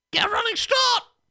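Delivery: mock shout, very high, loud.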